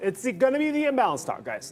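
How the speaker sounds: slight Italian accent with a high, wide lilt.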